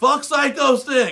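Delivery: high, loud, slow, drawn-out mocking yell. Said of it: "was in that building yelling".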